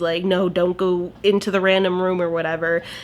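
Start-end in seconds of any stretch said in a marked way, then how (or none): none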